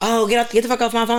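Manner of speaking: irritated, angry, snapping outburst. Acting out how one talks in an angry stage: imitating an angry outburst. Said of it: "you don't have to be so angry".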